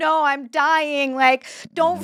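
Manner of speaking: high, tearful, sobbing pleading tone. Retelling how a guy convinced he was dying begged the speaker's dad, imitating someone crying and pleading. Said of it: "he's like crying".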